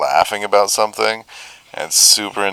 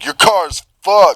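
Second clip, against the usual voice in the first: very high dude-bro delivery with bro energy; 11 semitones higher, 4 dB louder than usual. Retelling what the other driver said after the crash: imitating a bro. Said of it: "super bro energy".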